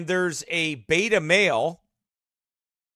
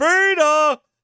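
high, loud yell. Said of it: "running through the house yelling".

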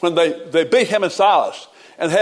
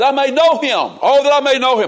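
mock crying out, a repeated cry; 6 semitones higher, 4 dB louder than usual. Reading a verse aloud, acting out Paul's words: Paul crying out. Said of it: "You can just see Paul crying out".

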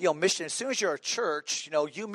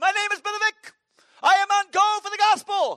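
bubbly, bursting, effervescent, very high and loud voice; 7 dB louder than usual. Show how Brother Vic talked in normal conversation, in an effervescent Brother Vic voice. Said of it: "had the most effervescent personality".

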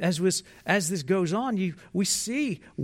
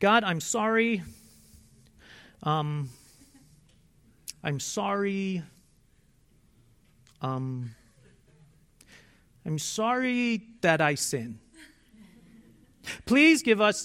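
very slow, dragged out, hesitant and halting. Retelling how a child would pray at night: imitating a child's halting prayer. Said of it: "her "I'm sorry" part would go like this".

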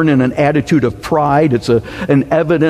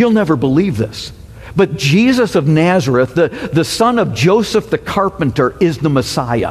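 normal talking voice

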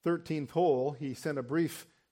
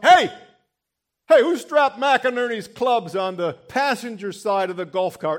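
booming, loud, high barked shouting; 7 semitones higher, 11 dB louder than usual. Recalling the assistant pro criticizing pro shop workers, imitating Don barking. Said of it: "He'd bark out".

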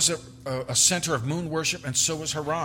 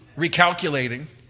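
irritated, impatient, fed-up satnav voice, louder; 5 dB louder than usual. Imitating the voice of a GPS, mock-irritated GPS voice. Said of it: "the sound of irritation in the voice of your GPS".

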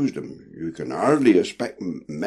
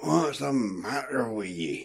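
gruff, muffled, half-asleep grumble; 4 semitones higher, 7 dB quieter than usual. A voice in the crew's quarters asks a restless sailor what's wrong, gruff sleepy question. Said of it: "came a gruff, questioning voice, muffled and sleepy".

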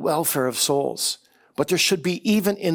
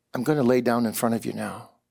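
put-on soft voice, lower pitch; 5 semitones lower than usual. Retelling a man's humble words to an angry brother: imitating a soft voice. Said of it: "in a soft voice and he said".

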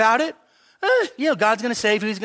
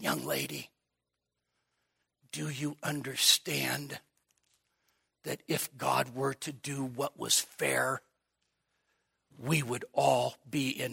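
put-on gravelly male voice, quieter and lower; 8 semitones lower, 12 dB quieter than usual. Retelling what a man said when he turned to a young lady, imitating his gravelly voice. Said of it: "he had this gravelly voice".

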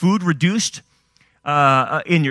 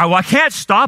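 ordinary talk, nothing marked

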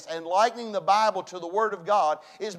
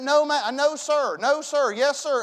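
mock very slow, nervous, flustered stammering; 5 semitones higher than usual. Retelling a first visit to preach chapel: imitating own nervous stammering. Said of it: "I was so nervous".

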